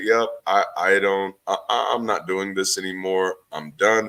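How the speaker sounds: plain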